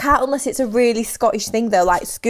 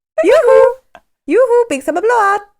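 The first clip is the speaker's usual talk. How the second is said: put-on Swedish-sounding accent, higher and louder; 10 semitones higher, 6 dB louder than usual. Repeating a line from Frozen, imitating Frozen. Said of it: "It's just frozen".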